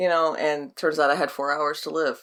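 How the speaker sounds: ordinary talk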